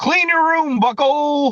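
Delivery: very high, squeaky put-on voice. Doing a Jordan Peterson impression that sounds like Kermit. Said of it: "when I do a Jordan Peterson impression, it sounds like Kermit".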